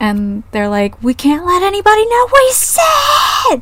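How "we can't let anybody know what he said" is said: high, loud angry shout. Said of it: "or just straight up angry".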